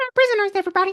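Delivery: very high squeaky voice. Retelling a story where the dog Alpha speaks: squeaky Alpha voice. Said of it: "Alpha still has the squeaky voice".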